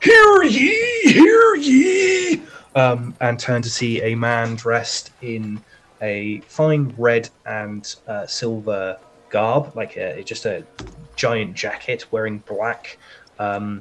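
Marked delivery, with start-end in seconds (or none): 0.0-2.4 very loud, very high, very slow booming crier's call. Narrator describing a man with a handbell calling through the crowd: booming voice calling through crowd. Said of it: "you hear a booming voice go through the crowd".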